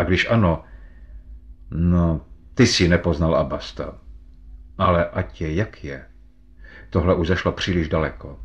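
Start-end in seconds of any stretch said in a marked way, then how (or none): none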